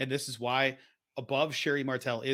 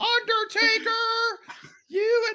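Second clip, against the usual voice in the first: very high, loud voice, calling out; 7 dB louder than usual. Imitating Paul Bearer calling to the Undertaker: high-pitched Paul Bearer impression. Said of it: "I hadn't heard your impression of him before".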